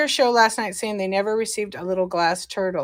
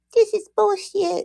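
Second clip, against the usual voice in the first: put-on squeaky, very high, cute little baby voice; 10 semitones higher than usual. Quoting a kid in the corner who kept complaining, in a cute little baby voice. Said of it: "It's like a cute little baby voice".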